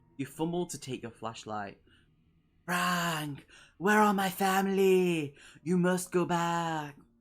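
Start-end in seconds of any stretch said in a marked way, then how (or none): 2.7-6.9 raspy, strained, labored voice, high and slow. Narrator voices a hunched figure lurking in darkness, speaking first; strained raspy voice. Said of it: "speaks first in a strained and raspy voice".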